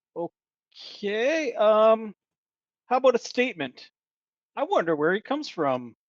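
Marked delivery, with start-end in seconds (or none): 4.6-5.9 pitch lifting at the end on from. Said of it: "High inflection?".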